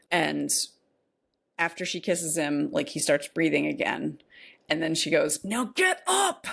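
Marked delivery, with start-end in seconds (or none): 5.4-6.4 mock shrill, very high-pitched shout. Retelling a film scene where a character shouts at someone: imitating a shout. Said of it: "and shouts at him".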